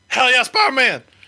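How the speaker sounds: put-on excitement. Retelling own reaction to the trailer: retelling own excited shout. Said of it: "I just remember going".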